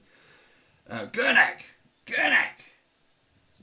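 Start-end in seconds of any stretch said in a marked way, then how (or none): 1.1-2.6 loud high-pitched shouting. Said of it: "he shouts in".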